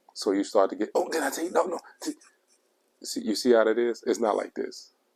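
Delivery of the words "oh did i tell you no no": voice rising high, excited and emotional. Showing how emotion makes a voice go high: high-pitched excited voice. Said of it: "your voice goes high up".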